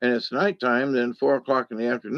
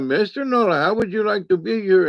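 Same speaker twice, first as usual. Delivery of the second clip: quick, rattled, pitched-up put-on Indian accent; 7 semitones higher, 4 dB louder than usual. Retelling how a man who knew his name talked to him, imitating an Indian accent. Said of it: "He was talking like this".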